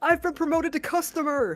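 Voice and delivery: very loud, shrill, high-pitched shouted yell. Retelling how a fired former manager walked into the store: imitating someone yelling. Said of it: "he just yells out loud".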